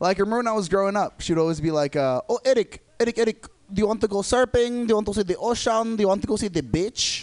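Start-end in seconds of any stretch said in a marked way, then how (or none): 2.0-7.2 put-on thick Filipino accent, higher, slower. Imitating his mom asking him things when he was growing up, thick Filipino accent. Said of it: "a really thick accent".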